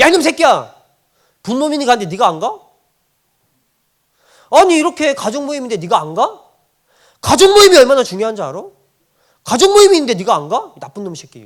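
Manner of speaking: irritated, loud, high-pitched angry voice. Acting out a parent scolding a child as an example, acting out angry scolding. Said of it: "막 화를 내고 짜증을 내는 거예요".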